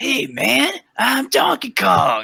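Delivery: raspy, weird, very high voice, slow. Mocking a cartoon voice: raspy weird Donkey Kong voice. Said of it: "Donkey Kong, raspy and weird".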